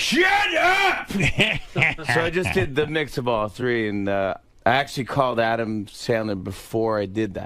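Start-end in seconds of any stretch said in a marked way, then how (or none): 0.0-1.1 put-on high, loud yelling voice. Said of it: "the third part is where he goes like, he yells".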